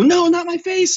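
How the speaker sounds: very high, loud, pleading dubbed cry. Retelling a movie scene where a henchman cries out: imitating a henchman's dubbed cry. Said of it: "you can hear him go".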